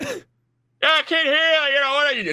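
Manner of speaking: play-acted very high screaming over popping noise. Retelling what dad said at the range over gunfire: imitating someone screaming. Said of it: "screaming over it".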